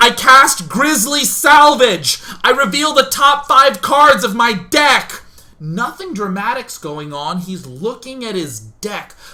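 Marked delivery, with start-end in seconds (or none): 0.0-5.2 very loud, shrill, adrenaline-fuelled full-volume screaming. Imitating a roleplaying player casting a spell: imitating a nerd screaming a spell. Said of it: "but he's screaming".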